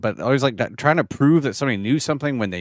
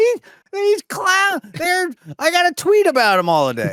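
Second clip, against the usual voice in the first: high-pitched, swooping crank voice; 4 dB louder than usual. Joking about politicians trading stocks, in a talk radio crank caller voice. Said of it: "my talk radio, uh, bit here".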